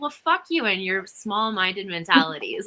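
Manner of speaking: plain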